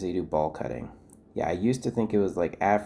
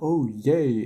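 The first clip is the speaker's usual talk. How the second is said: acted, pitched-up sarcastic little yay; 6 semitones higher, 4 dB louder than usual. Retelling own past reactions to bad news: imitating own sarcastic cheer. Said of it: "all of my hallelujahs were sarcastic".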